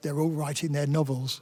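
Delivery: low mutter under breath. Quoting an editor touring rooms of journalists, muttered under his breath. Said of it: "said under his breath".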